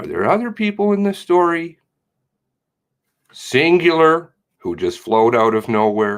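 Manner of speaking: suggestive, very sarcastic tone. Asking pointed questions about other people in a story: sarcastic. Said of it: "Very sarcastic".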